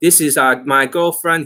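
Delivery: English with a put-on Chinese accent. Retelling how a cousin talked to people, imitating a Chinese accent. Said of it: "he's speaking Chinese accent".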